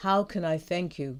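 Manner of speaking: usual speaking voice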